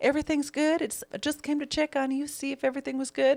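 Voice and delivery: light Southern drawl in a very high voice. Acting out a movie heroine reassuring a man: light southern drawl. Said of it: "She doesn't really have a drawl, though".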